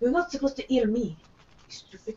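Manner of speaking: harsh, rough whisper. A player's character looks at the seed and speaks to it in a harsh whisper. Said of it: "whisper to it".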